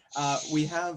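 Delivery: ordinary delivery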